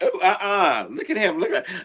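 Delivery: high, amused, giggling delivery. Retelling own reaction while watching reality shows: imitating own laughing reaction.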